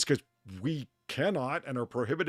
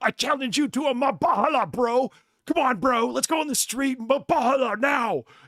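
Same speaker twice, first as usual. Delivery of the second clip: very high, furious, outraged screaming yell; 11 semitones higher, 5 dB louder than usual. Retelling how a man in a recording challenged another: imitating an outraged screaming man. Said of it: "He just keeps screaming at the guy".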